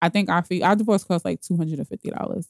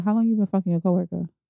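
put-on very calm, dead calm tone. Retelling confronting him with a question, reenacting a very calm tone. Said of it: "Mad calm".

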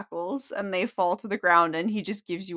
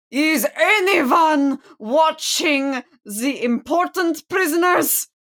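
loud, high booming call; 8 semitones higher, 6 dB louder than usual. A game master narrates a voice calling out as the prisoners are freed: loud booming voice. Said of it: "loud voice booming out".

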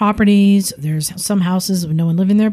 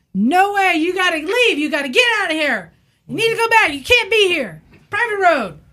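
very high, shrill, shrieking scream; 11 semitones higher than usual. Retelling a confrontation with an armed man on a road: imitating a man screaming. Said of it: "And he's just screaming".

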